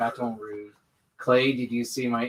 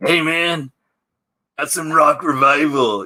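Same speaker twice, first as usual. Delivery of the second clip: very loud, put-on bro voice; 4 semitones higher, 11 dB louder than usual. Recalling a video message sent to someone, put-on Rock Revival guy voice. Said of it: "I did that voice".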